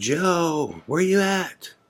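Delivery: play-acted, very high-pitched, slow, drawn-out yell. Retelling yelling for Joe while searching: retelling yelling for someone. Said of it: "I just start yelling for him".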